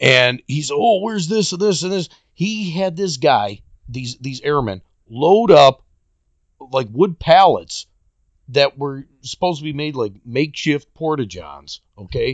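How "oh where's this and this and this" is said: put-on barking voice, fast and high. Retelling how a man barked at a young airman, retelling barked orders. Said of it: "he's barking at this airman".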